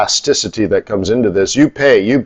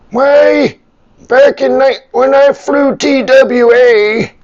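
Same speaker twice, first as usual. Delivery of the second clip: put-on high, slow, croaky grumpy old man voice. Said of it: "grumpy old man".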